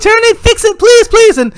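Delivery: put-on very high, loud pleading child-like voice.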